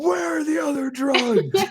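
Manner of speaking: very high, loud mock interrogator yell.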